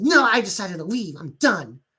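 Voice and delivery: put-on snarky tone. Retelling a story where a character leaves: imitating a snarky reply. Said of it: "she very snarky says".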